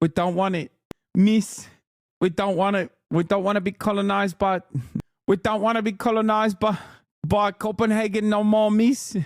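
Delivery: put-on Maori accent. Watching a video interview, imitating the interviewee: imitating a Maori-sounding accent. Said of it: "What the hell is this accent".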